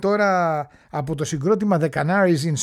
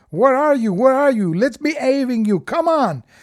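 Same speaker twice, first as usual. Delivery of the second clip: put-on loud shout in an American accent; 7 semitones higher, 5 dB louder than usual. Recounting a woman grabbing the mic at half-time, retelling a shout to the crowd. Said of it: "εγώ έχω Αμερικάνη".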